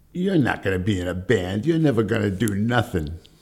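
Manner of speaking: put-on bitchy voice. Acting out the man you used to work for talking to you, imitating a very bitchy voice. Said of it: "in a very bitchy voice say to me".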